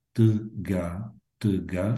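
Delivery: word said slowly and carefully. Teaching listeners a Bulgarian word, saying a word slowly. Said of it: "if you're trying to say it slowly".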